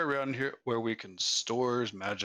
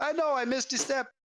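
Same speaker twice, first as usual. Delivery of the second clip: very high put-on Jamaican accent, cried out; 3 dB louder than usual. Imagining a character missing the last stair and crying out, Jamaican accent. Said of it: "cry out in a Jamaican accent".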